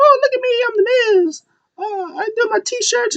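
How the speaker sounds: put-on, very high, squeaky, swooping sing-song mockery. Retelling how he mocked the Miz, in a high Miz voice. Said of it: "a high Miz voice".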